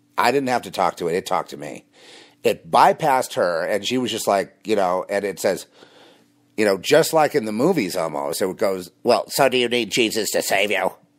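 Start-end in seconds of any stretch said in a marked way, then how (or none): 9.0-10.9 put-on woman's voice. Retelling what the voice inside a woman said to him, voice of a lady. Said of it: "in that kind of voice for a lady".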